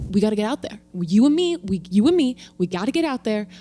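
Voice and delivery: put-on strong New York accent, laid on thick. Quoting a friend born and raised in Queens, strong New York accent. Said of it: "has like a very strong New York accent".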